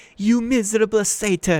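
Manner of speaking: very high enraged snarl. Narrator reads a character's line to a satyr, snarling with rage. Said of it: "she snarled".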